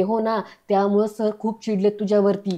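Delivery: ordinary delivery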